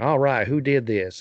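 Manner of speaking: thick, laid-on, put-on country accent. Imitating an actor's role in a movie: Daniel Craig country accent. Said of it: "some, like, like, country accent, so he's like".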